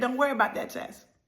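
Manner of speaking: ordinary delivery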